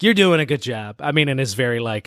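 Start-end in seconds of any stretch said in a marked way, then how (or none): 0.0-1.0 offhand, aloof put-on voice. Describing how Batman treats Kyle: offhand Batman impression. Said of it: ""I barely look at you" kinda way".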